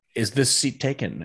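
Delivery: plain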